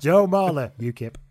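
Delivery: loud, solemn, grave official announcer voice. Mimicking the squad announcement as an election result: returning officer. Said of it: "A returning officer".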